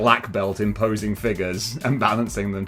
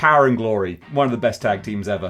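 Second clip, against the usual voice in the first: ordinary talk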